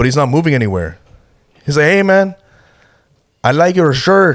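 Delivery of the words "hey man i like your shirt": put-on very slow, high-pitched drunken stupor drawl. Retelling a drunk stranger who stopped at their table: imitating drunken speech. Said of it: "He was just like saying some drunk shit".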